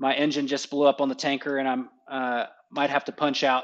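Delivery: ordinary delivery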